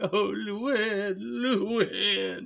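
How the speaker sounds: high, weepy moan. Retelling a scene where a neighbor weeps in the next room: imitating moaning and weeping. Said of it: "moaning and weeping in the next room".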